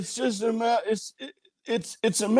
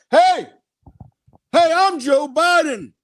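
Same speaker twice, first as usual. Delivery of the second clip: raised, pitched-up, loud yell; 6 semitones higher, 6 dB louder than usual. Playing a politician calling out to a passerby: Joe Biden impression yelling. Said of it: "Are you yelling at a passerby?".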